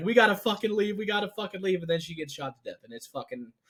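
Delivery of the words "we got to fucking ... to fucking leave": imitated heart-wrenching scream, higher pitched. Retelling a movie scene where a character screams at others to leave: imitating Lila's heart-wrenching screaming. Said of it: "screaming voice".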